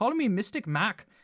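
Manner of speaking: badly attempted put-on Irish accent. Predicting a player's next team, the speaker tries a bad Conor McGregor accent. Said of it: "I cannot do a good Irish accent".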